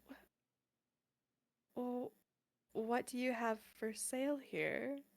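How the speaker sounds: soft, very slow, a little shocked, taken aback. Asking the odd shopkeeper figure what is for sale: acting a little shocked. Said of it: "Charles a little shocked".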